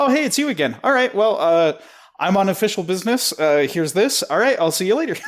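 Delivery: high, zippy, rattled-off quick-fire talk. Acting out how a character talks, in a Hermes fast-talking voice. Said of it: "he says everything so quickly".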